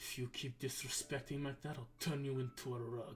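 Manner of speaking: half-whispered, barely audible, very soft. Delivering a threat that only two of the listeners can hear, half-whispering. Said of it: "in a whisper".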